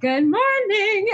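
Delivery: high, slow, bubbly, cheery, drawn out. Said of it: "I would walk in and be like".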